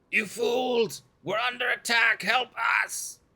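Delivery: very high, yelled goblin-creature voice, alarmed. During a game, a player does a hobgoblin impression for a deception check. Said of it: "I will do my best hobgoblin impression".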